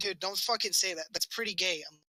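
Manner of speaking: ordinary talk, nothing marked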